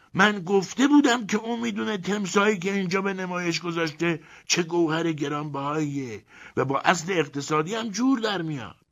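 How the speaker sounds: shouting in triumph, very high. Reading a story aloud, a character answers a German's offer to sell: triumphant shout. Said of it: "با لحنی پیروزمندانه فریاد زد".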